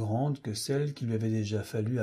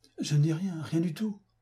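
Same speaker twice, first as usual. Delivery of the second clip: stammering, stuttering, higher pitch; 5 semitones higher than usual. M. Fotheringay answers a police officer's question, stammering. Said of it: "balbutia M. Fotheringay".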